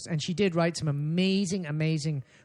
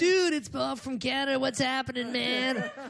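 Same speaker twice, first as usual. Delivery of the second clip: very high, slow, put-on laid-back West Coast dude drawl; 9 semitones higher than usual. Pretending to phone into interviews in Germany: totally West Coast dude voice. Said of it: "be totally West Coast about it".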